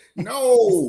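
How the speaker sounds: put-on very loud, long, anguished "no". Retelling how the man answered: imitating a pained no. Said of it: "Like that".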